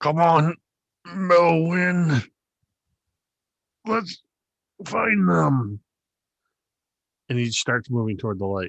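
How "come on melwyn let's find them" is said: very slow, high, gritted teeth, Melwyn stretched out. Narrator voicing a man calling his companion toward the light, through gritted teeth. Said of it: "he says through gritted teeth".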